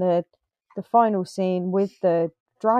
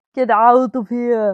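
put-on loud, raised voice in an Austrian accent; 5 semitones higher, 7 dB louder than usual. Showing how a man's voice just changes on one odd line, in an Arnie voice. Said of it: "which sounded like this".

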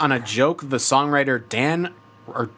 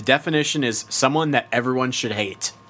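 ordinary delivery

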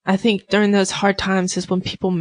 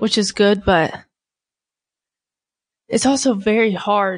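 tearful, emotional voice. Wrapping up the conversation, saying one last thing while crying. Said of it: "You're supposed to not let me cry".

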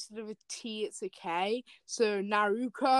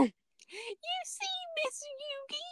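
very high, soft squeaky voice; 5 dB quieter than usual. Reading a story aloud, voicing Deku in a Dobby voice. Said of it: "Deku's Dobby now".

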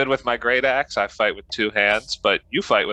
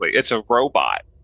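snide, mocking, sarcastic tone. Throwing a cup to another character in the game: sarcastic. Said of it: "I throw the cup to him sarcastically".

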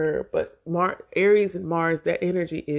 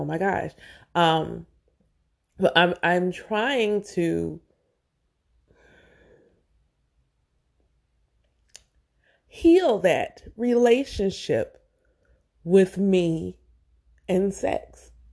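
very slow, drawn-out speech, holding back emotion. Talking about their poems and stories, the speaker starts getting emotional. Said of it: "without getting emotional".

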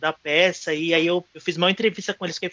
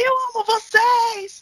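shrill, very high yell; 3 dB louder than usual. Recalling holding up a sign after a play ended, retelling a shout. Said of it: "eu levantei o cartaz assim e gritei".

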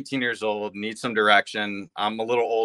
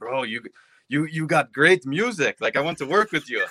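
imitated French accent, much higher pitch; 5 semitones higher than usual. Retelling a producer who messaged a musician on Instagram; French accent. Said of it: "he's talking in his little French voice".

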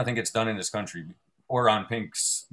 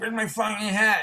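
put-on very high-pitched, drunken, angry voice; 13 semitones higher than usual. Retelling a man demanding his missing hat as he left: mock-drunk demand. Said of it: "He was all drunk".

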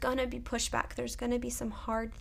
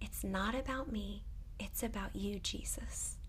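put-on little voice of about a 7-year-old child; 3 semitones lower, 6 dB quieter than usual. Speaker retelling her reply to him as a child, little 7-year-old voice. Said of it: "in my little 7-year-old voice".

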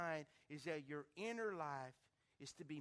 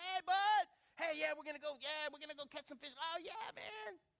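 loud, breezy, very high friendly buddy banter; 10 semitones higher, 7 dB louder than usual. Acting out friends making fishing plans: imitating a friend's casual chatter. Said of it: "it's your friends".

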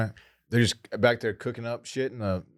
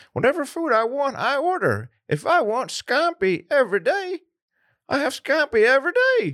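put-on very high, raised elderly woman voice; 6 dB louder than usual. Reading out a woman's quoted words in an old woman voice. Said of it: "You have to read an old woman voice then".

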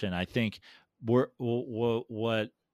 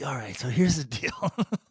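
voiced stage whisper; 2 semitones higher than usual. Imitating the other speaker's half-whispering on a podcast: imitating someone half-whispering.

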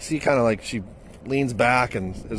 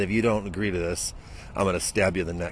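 mock deadpan delivery, quieter; 4 semitones lower, 5 dB quieter than usual. Retelling how Dave held a pen to a stranger's throat, retelling a deadpan line.

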